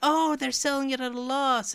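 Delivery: fake, very high anime girl voice. Acting out how people will react to a console's price: bad anime girl impression. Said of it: "A bad impression of an anime girl".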